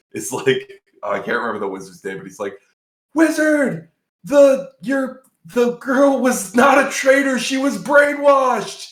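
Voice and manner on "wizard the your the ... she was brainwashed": mock very high, loud, drawn-out scream. Retelling a movie's ending, imitating a character screaming. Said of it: "literally screams like that".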